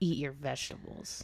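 stern mock whisper, soft and low.

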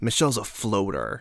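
normal talking voice

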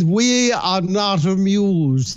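slow delivery in a regal, monarch-like voice. Explaining the royal we, quoting how the queen would say it: imitating the queen. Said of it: "the queen would say".

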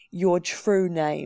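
sharp and curt. An elder interrogating a frightened girl; snapping. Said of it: "the elder on the far right snapped".

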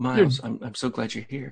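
very soft, hushed murmur. Imitating a character greeting Miles: imitating very soft talking. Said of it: "Very soft talking".

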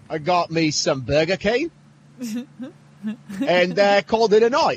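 put-on Australian accent, rising line ends. Doing a bit right after describing how Australians talk, in an Australian accent. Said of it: "I like Australian [name]".

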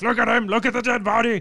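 very high, loud, commanding yell. Retelling a flashback where the captain yells: imitating a captain yelling. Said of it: "his captain yelling".

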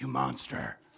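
put-on mutter under breath. Imagining the prophet Nathan insulting David in passing: imitating someone muttering under their breath. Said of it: "said under his breath".

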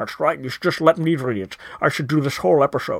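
deep, low, carefully enunciated delivery. Reading a part of the episode aloud: Sean Connery voice. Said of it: "Sean Connery is reading this part of the episode".

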